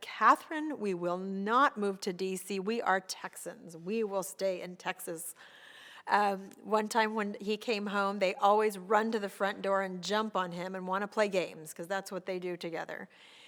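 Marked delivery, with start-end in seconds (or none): none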